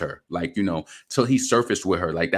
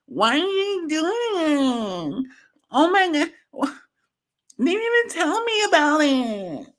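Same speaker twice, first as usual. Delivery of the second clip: very high, drawn-out, swooping whine. Mocking people from upstate New York: imitating a whiny voice. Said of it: "those whiny voices".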